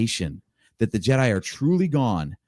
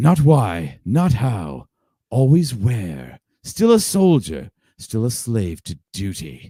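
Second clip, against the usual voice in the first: threatening villain voice. Speaker voices Maul addressing Kenobi in an acted scene, Sam Witwer's Maul voice. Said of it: "our Sam Witwer going".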